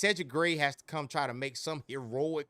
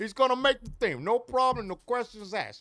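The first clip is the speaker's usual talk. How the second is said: bad put-on Italian accent, higher and louder; 9 semitones higher, 5 dB louder than usual. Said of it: "the worst Italian accent ever".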